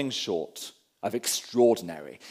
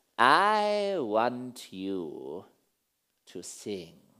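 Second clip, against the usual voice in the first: low, soft, slithery beast voice, I drawn out; 5 semitones lower, 6 dB quieter than usual. Reading a story aloud, the grey beast speaks to Patrick in a soft slithery beast voice. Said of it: "The beast's voice was soft and slithery".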